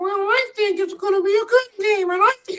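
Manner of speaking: very high squeaky cartoon voice. Retelling a sideline interview, the big costumed man answers in a Mickey Mouse voice. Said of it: "He's got the Mickey Mouse voice".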